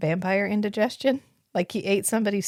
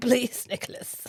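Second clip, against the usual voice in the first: over-enunciated s sound with higher pitch; 4 semitones higher, 4 dB quieter than usual. Describing how out of it Lacroix is, quoting him: Lacroix impression, enunciated s. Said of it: "he really enunciates the s".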